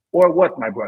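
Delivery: put-on Slovenian accent. Imitating Luka looking at the coach: Luka's Slovenian accent. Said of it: "in his best Slovenian voice".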